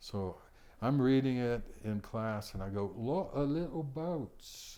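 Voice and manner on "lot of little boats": put-on high Cockney accent, every T sound dropped. Retelling reading aloud in class, in a cockney accent with no t sounds. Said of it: "And Cockney, you don't have any T's at all. ... No T's".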